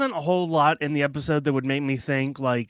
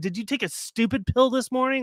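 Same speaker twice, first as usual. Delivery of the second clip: high mock mustache-twirling villain yell; 9 semitones higher than usual. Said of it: "yelling at the president".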